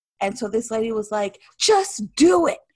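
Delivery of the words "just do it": loud, aggressive, high-pitched shout. Retelling what a lady at a brewery said: imitating a loud aggressive shout. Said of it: "really loud, really aggressive".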